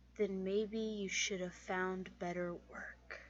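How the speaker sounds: very softly spoken, hushed, barely audible. Facing a captured man in character, speaking very quietly. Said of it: "and then just very quietly say".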